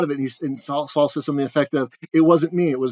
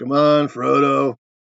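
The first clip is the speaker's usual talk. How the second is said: gruff put-on character voice. Casting Mike Ehrmantraut as a cussing Gandalf, the speaker quotes him in a gruff voice. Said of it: "Their gruff voice".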